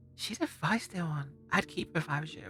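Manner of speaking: soft, confiding, leaning-in whisper. A character leans in to whisper to another character: whispering. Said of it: "lean in to whisper".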